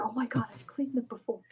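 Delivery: whispering in character. Answering whether the character says it aloud, whispering in character. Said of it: "but it's like a whisper".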